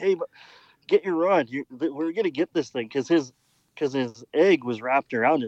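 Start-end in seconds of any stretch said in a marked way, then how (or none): 0.0-2.9 play-acted urgent holler, held in, pitched up. Retelling calling to the client to get his rod: retelling a holler. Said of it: "I'm hollering at the client".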